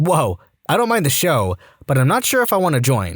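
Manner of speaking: usual speaking voice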